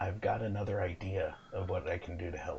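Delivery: secretive half-whisper, very quiet, barely audible. Voicing a character who keeps away from the ring, half-whispering in your ear. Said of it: "And she whispers in your ear".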